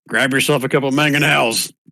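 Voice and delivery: high, hollered yelling. A character yells an order at Starbow, the treant, yelling. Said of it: "He yells at Starbow".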